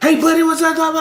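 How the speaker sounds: very high, over-theatrical, rattled-off salesman patter. Mocking pushy salespeople who greet strangers: imitating fast-talking salesman. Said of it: "all that fast talking shit".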